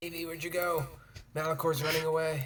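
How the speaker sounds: high stage whisper. Playing a character in a game, popping around to call for Evie, stage whisper. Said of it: "I pop around and stage whisper".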